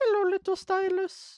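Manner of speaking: very high video-game character voice, cartoon-style, pitched way up. Retelling a game console ad, quoting the character: Mario voice. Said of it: "in, like, his Mario voice".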